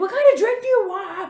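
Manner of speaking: very loud, high-pitched yelling. Retelling how a guy in a bar talked to the speaker, imitating someone yelling. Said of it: "I notice like he's yelling".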